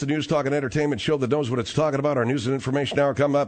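fast, rattled-off delivery. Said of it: "I know I'm talking a little fast".

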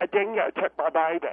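put-on woman's voice. Doing an impression of the lady: Lindy Chamberlain impression. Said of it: "Here's my impression of the lady".

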